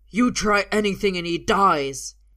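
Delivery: yelled out at full volume, very loud. Alvar holds Arthur against his body as Uther runs round the car, yelling. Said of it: "he yells".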